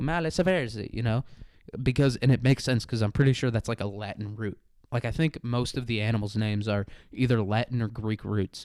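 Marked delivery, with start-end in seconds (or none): 0.0-0.9 put-on Italian accent, pitched up. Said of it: "Italian would probably be second on there".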